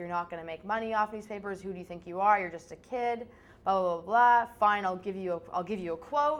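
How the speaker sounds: ordinary talk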